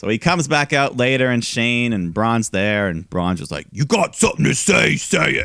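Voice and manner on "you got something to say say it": rough, rasping voice, pitched a notch higher. Retelling what Braun said when he came out, Braun Strowman voice. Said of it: "In his Braun voice".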